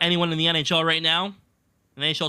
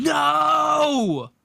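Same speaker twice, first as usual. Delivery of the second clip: mock, very high, shrill, stretched-out scream; 10 semitones higher, 4 dB louder than usual. Retelling a podcast guest reacting to a trade: imitating a scream of no. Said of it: "literally screamed".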